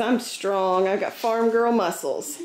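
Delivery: ordinary talk, nothing marked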